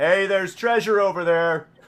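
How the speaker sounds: very loud, high, booming blaring voice. Narrating the scene to a player, the speaker voices the shield in a real loud voice. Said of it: "you hear a real loud voice coming from the shield".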